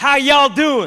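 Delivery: loud put-on Texan accent, American accent attempt. London speaker trying out his texan accent for listeners, put-on texan accent. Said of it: "work on my Texan and American accent. So here it goes".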